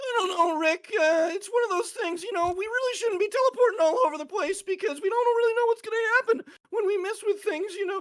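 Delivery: very high, loud cartoon voice. Showing the voices they can do: Morty voice from Rick and Morty. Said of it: "Rick and Morty".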